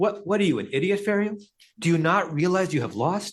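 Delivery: play-acted, high, cynical, accusatory tone. Speaker recreating Larry's tone when translating the question to Pharaoh, Larry's cynical accusatory tone. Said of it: "going back to the tone of voice that Larry was using".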